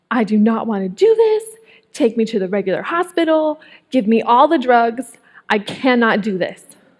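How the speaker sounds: acted, mock-panicked, frantic voice. Retelling pleading with her husband during labor, reenacting her full-blown breakdown. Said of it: "I was having a full-blown breakdown".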